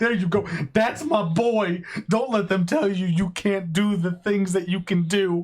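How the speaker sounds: choked up with pride. Recalling cheering on a game's hero as he saves her: choked up. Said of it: "I'm getting like all choked up right now".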